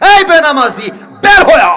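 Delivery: put-on harsh scolding tone. Speaker retelling a hadith, acting out the angel of death's harsh rebuke. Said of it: "ধমক".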